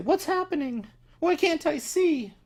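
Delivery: put-on very high, panicky, sobbing little girl voice. A game master voices a little girl heard in the players' minds: crying, panicking little girl. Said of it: "she seems to be like crying and kind of panicking".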